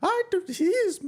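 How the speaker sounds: very high, loud, silly voice. Retelling Brendan Fraser's first scene as a lawyer: imitating Brendan Fraser's silly voice. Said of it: "I don't know why I sound like that".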